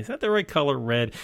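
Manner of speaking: ordinary talk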